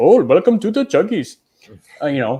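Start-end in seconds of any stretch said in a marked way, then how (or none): 0.0-1.4 put-on Indian accent, synthetic voice, pitched up. Describing a speech tool's voice choices, giving an example guy: Indian accent. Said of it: "an Indian accent".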